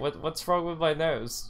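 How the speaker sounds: dry, mocking, sarcastic delivery. Retelling their reply to people commenting on their gender: retelling a sarcastic reply. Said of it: "in more of a, like, a sarcastic way".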